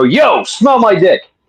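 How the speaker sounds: put-on pissed-off girl's voice. Retelling what a girl used to say when pissed off: imitating an angry girl. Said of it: "if she was pissed off, she would go".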